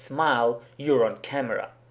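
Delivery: ordinary delivery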